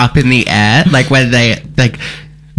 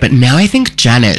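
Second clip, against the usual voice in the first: ordinary talk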